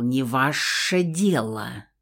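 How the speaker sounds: hissed through clenched teeth. A man answers the narrator's blunt question: hissed through clenched teeth. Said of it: "сквозь плотно стиснутые зубы прошипел".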